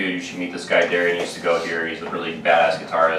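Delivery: normal talking voice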